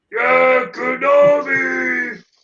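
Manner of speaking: monster character voice. Repeating the other speaker's quoted shout: Cookie Monster-like voice. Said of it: "it might sound like Cookie Monster".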